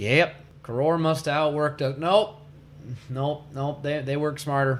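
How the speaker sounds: plain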